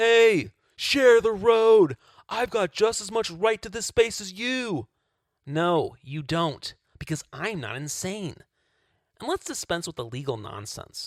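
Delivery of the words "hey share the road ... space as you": full-on screaming, high and loud. Acting out a cyclist told to use a gym: mock screaming. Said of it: "I start screaming".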